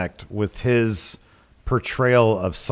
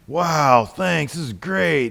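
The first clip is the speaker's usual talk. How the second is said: put-on older surfer-guy voice, higher pitched; 4 semitones higher than usual. Retelling how an older Wes sounded in the episode: imitating Wil Wheaton's older voice. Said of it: "a voice like".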